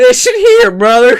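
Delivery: put-on country boy voice. Doing a put-on character voice while joking about the Cold War: put-on country boy voice. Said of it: "you will be Kyle every time you do that voice".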